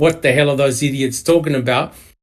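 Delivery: ordinary talk, nothing marked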